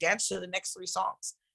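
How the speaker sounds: usual speaking voice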